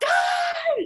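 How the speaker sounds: very high, drawn-out, full-volume shriek. In a game, a player's character calls for their friends: yelling as loud as possible. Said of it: "And I'm going to yell".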